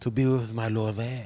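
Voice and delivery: laughing, fake French accent.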